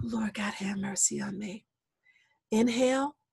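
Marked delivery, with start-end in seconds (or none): 0.0-1.6 soft, hushed, breathy whisper. Teaching breath prayers, the speaker demonstrates one: whisper. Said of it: "you just whisper".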